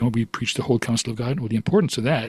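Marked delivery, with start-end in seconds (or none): none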